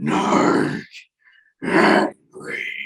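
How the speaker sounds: loud, resounding, booming voice. Game master voicing a voice a player hears in his mind, booming voice. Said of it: "booming out in your mind".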